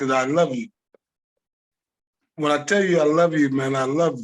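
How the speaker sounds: emotional, voice choking up. Telling old teammates what they mean to him, emotional, voice choked up. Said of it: "I get emotional when I".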